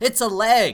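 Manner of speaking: mock beaming, proud, very high, very loud. Retelling Dorian presenting a wrapped gift to John, imitating Dorian very pleased with himself. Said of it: "totally unsarcastically very pleased with himself goes".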